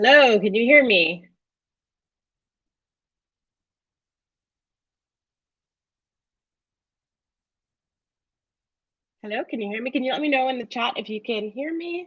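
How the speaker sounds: voice full of panic, repeated calling out. Presenter checking whether the online audience can hear: panicked voice. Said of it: "I heard the panic in your voice".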